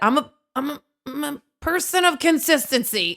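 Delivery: high voice, stuttering and repeating "I'm a". Retelling a reply to a little kid at the dance studio, stuttering. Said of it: "I said it with a stutter too".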